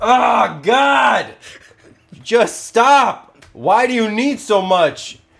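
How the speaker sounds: very high-pitched, slow, drawn-out yelling. Recounting what she yelled while trying to feed a baby: retelling someone yelling. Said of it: "she's yelling".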